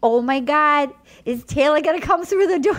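put-on sweet Jersey accent. Imitating a man's mom waiting for him at the door, use a sweet New Jersey accent. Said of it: "sweet New Jersey accent".

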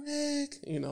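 put-on very high, soft, hushed girly voice. Retelling what a friend asked him while out shooting: girly voice. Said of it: "she got a real girly voice".

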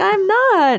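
play-acted, very high, winsome little protesting tone. Mimicking the other speaker denying it: imitating a winsome denial. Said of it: "He's very winsome".

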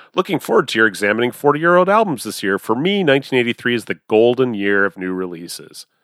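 ordinary talk

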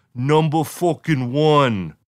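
aggressive, close-up rock-star style taunting. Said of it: "me trying to do a [name] impression".

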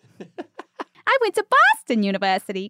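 very slow, sing-song, swooping, drawn-out cartoon lilt. Acting out a quoted interview answer in a Betty Boop voice. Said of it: "she sounds like Betty Boop".

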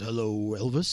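put-on radio legend voice. Imitating a radio legend greeting the morning show: Jim Kerr voice. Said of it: "He's got that great voice".

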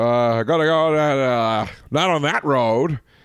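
put-on Maine accent. Asked by the other speaker to try a Maine accent: Fred Gwynne-style Maine accent. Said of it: "Can you do a Maine accent?".

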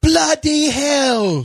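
very high put-on English accent with "hell" stretched. Asked how they would say it in England, trying out accents; mock English accent. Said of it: "How would they do it in England?".

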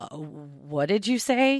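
stunned, surprised, taken aback, very slow. Reading her reply to the narrator's unexpected answer, taken aback. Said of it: "wide-eyed reaction that she was not expecting that response".

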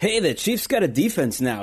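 bragging, boastful, crowing voice. Imitating how people started the year talking about the Chiefs: imitating a bragging fan. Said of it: "I love when you do that voice".

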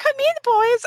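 very high-pitched, cartoon vamp sexpot voice. Describing the voice given to a sexpot cartoon character, weirdly high-pitched voice. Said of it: "her voice is weirdly high pitched".

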